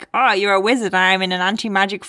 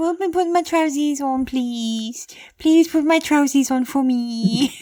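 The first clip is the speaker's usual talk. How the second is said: silly put-on pleading wizard voice, pitched higher; 6 semitones higher than usual. Acting out a wizard asking a friend to help with trousers: put-on begging wizard voice. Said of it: "What is this voice you're doing?".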